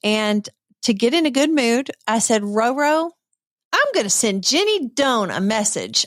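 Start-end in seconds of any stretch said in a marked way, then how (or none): 2.4-6.0 sassy, cheeky, full of attitude. Retelling own words at a retreat about messaging a guest: imitating own sassy tone. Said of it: "I was just being a sassy".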